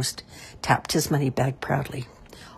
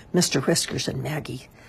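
plain reading voice

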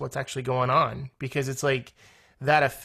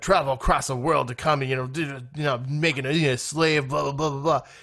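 mock grumbling, griping tone. Retelling a son complaining while taking out the trash: imitating someone griping. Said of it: "as he's griping about this".

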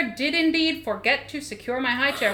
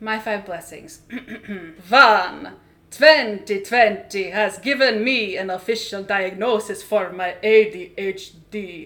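put-on vampire count voice; 4 semitones lower, 4 dB louder than usual. Speaker counts off five blessings in a Count Dracula voice. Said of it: "counting five of our blessings as either Count Dracula".

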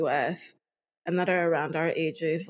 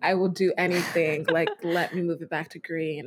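ordinary talk

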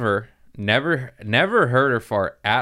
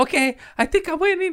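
put-on very high, little baby-like kid voice. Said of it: "his little baby voice".

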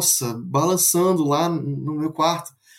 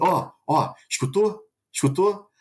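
slow, drawn-out, playful needling tone. Retelling how the father teased about a ghost: imitating father teasing. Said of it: "ainda zoando".

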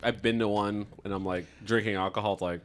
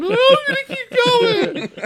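very high, drawn-out screaming; 12 dB louder than usual. Retelling a dad at a dune buggy track yelling at his kid: imitating a screaming dad. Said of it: "screaming at him".

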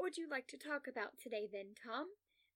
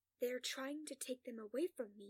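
harsh, hissed whisper. Reading a story aloud, voicing a patient's line: harsh whisper. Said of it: "he whispers harshly".

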